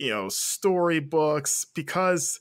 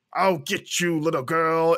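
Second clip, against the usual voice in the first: put-on deeper monster voice. Imitating a storybook narrator who gives Cheshire a deeper monster voice. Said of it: "it's her going like".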